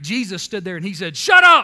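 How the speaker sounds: plain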